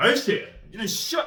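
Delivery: high-pitched, loud angry swearing, spat out.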